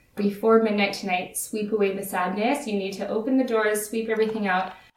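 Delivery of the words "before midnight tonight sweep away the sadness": usual speaking voice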